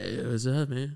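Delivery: mock spaced-out, dopey laid-back dude voice. Mocking how the other speaker talks on arriving: imitating a friend's stoned voice. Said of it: "you sound fucked up".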